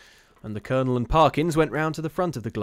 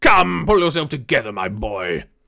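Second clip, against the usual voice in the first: irritated, annoyed tone; 8 dB louder than usual. A colonel answers a wailing boy, irritated. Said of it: "said the irritated Colonel".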